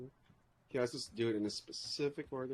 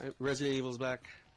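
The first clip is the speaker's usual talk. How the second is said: ordinary talk, nothing marked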